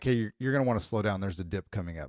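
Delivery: nice and calm, low, soft voice. Showing how a driving warning sounds when said nice and calm. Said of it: "if I just say it nice and calm".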